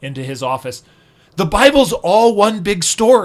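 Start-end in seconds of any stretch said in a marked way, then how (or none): 1.4-3.3 put-on dumbstruck outburst, very loud and high. Speaker reenacts walking into a professor's office; retelling a stunned remark. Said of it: "saying in this kind of stunned voice".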